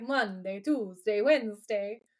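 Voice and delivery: put-on mobster voice. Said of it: "it's very, like, The Godfather".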